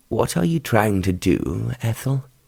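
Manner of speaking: low-voiced, kept quiet and low. Narrator reading a story, the young man answering the woman, in a low voice. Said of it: "he countered in a low voice".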